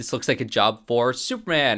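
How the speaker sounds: ordinary talk, nothing marked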